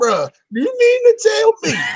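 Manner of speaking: put-on very high, sing-song, swooping old grandma voice. Retelling own complaint about fetching a disc, sounding like a grandma. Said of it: "I sound like my grandma right now".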